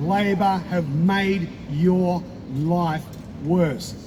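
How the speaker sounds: measured, slow, emphatic, word by word. Driving a point home to the audience, slow and deliberate. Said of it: "I say it slowly to drive it home".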